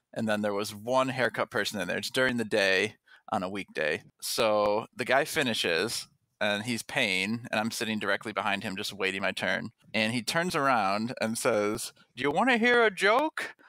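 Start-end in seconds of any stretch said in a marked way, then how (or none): 12.2-13.5 put-on old man's voice, pitched higher. Retelling an old man at a barbershop offering a joke: Harry Caray impersonation voice. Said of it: "his voice was kind of like the Harry Carey impersonation".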